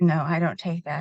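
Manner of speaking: ordinary talk, nothing marked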